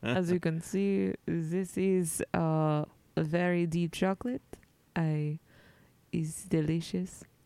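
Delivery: put-on blended French, German and Spanish accent. Playing a live field reporter in a comedy bit, French German Spanish accent. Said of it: "I did a French German Spanish accent".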